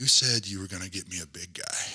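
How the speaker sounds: put-on stone-faced, flat deadpan delivery. Retelling a rock star's joke to his manager: imitating D's stone-faced deadpan. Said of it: "he said it just stone-faced straight".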